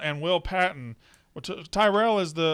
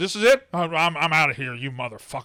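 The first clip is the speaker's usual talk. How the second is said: acted furious outburst. Recapping a TV show scene where a man storms out, mock fighting mad. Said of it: "He is just fighting mad".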